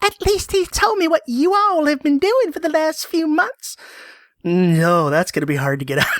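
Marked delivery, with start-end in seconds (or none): 0.0-3.8 very high American southern accent. Speaker rereading a line from a text, southern accent. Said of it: "Now I've got that southern voice in my head".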